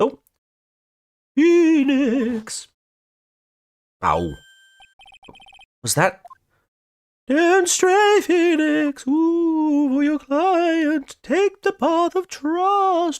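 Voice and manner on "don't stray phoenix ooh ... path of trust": spooky ghost voice, much higher. Reading game dialogue as a mysterious voice calling to the hero, spooky Mia voice. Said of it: "Ooh, spooky. Voice".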